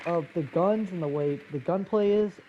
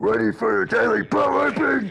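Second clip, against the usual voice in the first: harsh, loud, rough put-on demonic voice; 5 semitones higher, 7 dB louder than usual. Speaker, calling himself the Shadow Samurai, shows his usual voice: demonic voice. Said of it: "usually I'm more like".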